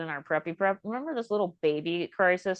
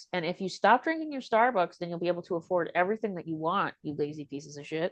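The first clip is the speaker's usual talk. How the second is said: normal talking voice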